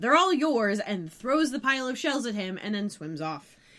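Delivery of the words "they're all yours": loud mock yell. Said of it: "So she yells".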